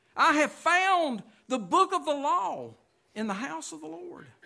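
high, loud cry full of excitement.

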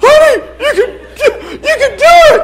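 mock very high, wimpy, weepy voice, slow and drawn out. Retelling cheering his wife on, imitating crying in a high voice. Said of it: "But my voice is high. I'm crying".

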